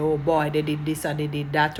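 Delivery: ordinary delivery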